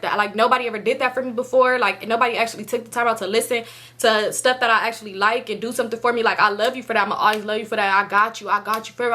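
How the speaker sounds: ordinary talk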